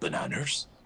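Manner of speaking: whispered, breathy, hushed delivery. Imitating the actor Liam Neeson saying a single word, Liam Neeson voice. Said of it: "the actor Liam Neeson saying the word bananas, but it's like".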